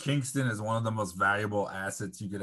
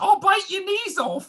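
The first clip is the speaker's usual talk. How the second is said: put-on Cockney accent, very high, loud, shrill; 10 dB louder than usual. Act out how he is going to yell at Paige, in a put-on Cockney accent. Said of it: "Why does he have a Cockney accent now?".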